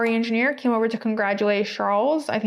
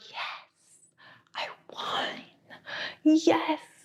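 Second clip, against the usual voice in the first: slow, understated whisper, barely voiced; 6 semitones higher, 6 dB quieter than usual. Retelling Oscar's understated race-win celebration: imitating Oscar whispering.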